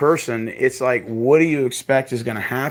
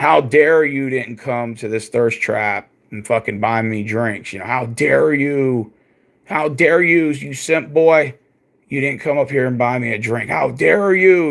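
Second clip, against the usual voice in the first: put-on snooty, self-important, haughty indignation. Imitating her demanding that men buy her drinks: mock arrogant tone. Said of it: "you could see some of the arrogance".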